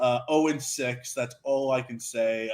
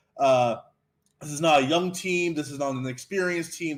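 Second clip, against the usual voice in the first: usual speaking voice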